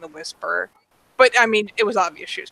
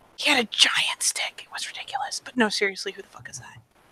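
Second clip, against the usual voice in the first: rushed, fast stage whisper; 6 dB quieter than usual. Speaker, after talk about why introductions matter, in a stage whisper. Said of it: "stage whisper?".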